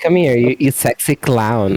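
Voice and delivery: camp manner, put on.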